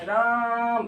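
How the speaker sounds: राम called long, middle vowel stretched, as from afar. Showing how a name sounds when called from far away: drawn-out vowel in राम. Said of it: "जैसे कुछ चिल्ला रहे हैं ना देरी से, तो वो लकार बीच में निकलती चली जा रही है".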